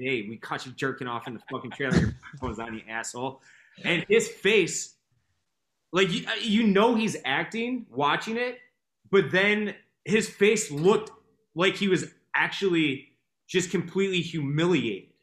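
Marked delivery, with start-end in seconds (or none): 0.0-3.4 whisper, lower and quieter. Retelling a line whispered in a show scene: imitating a whisper. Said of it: "And he whispers in".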